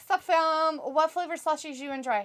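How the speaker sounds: usual speaking voice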